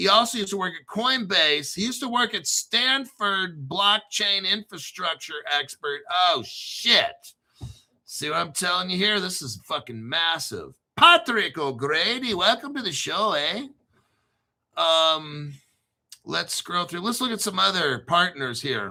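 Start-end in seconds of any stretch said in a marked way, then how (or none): 11.0-13.7 practiced put-on Irish accent. Host welcoming a guest to the show, in a put-on Irish accent. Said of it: "That's my Irish accent. I've been practicing".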